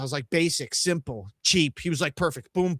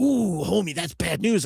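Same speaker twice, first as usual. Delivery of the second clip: put-on New York accent with Spanish inflection. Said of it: "it sounds a little like Cheech Marin".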